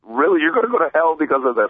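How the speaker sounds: mock insistent, high, emphatic, preachy voice. Quoting family members during an argument about religion, mock-emphatic insistence. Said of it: "they'll say it so emphatically".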